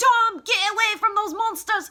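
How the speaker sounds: shrill, loud Scottish woman's yell. Fan recalls Tom's mother from Gargoyles calling him away, in a stereotypical Scottish woman voice. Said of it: "the voice of like a stereotypical Scottish woman".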